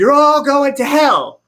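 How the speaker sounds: loud, fiery, sermon-style hellfire preacher voice. Told to get the preacher voice out, the speaker addresses everyone in a preacher voice. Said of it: "get your preacher voice out".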